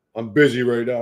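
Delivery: brusque, curt, short dismissive tone. Retelling how Mewtwo was short with her: imitating Mewtwo being curt. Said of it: "short with her".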